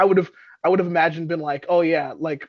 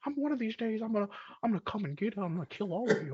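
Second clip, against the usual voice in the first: hushed, high-pitched, weird murmur, barely audible; 5 semitones higher, 12 dB quieter than usual. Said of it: "weirdo with your weirdo voice".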